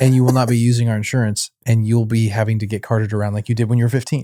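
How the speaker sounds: ordinary talk, nothing marked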